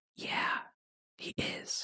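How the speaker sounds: hushed, breathy whisper. Answering the other speaker's question in a shared conversation, whispering. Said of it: "We're both whispering about the Epstein files".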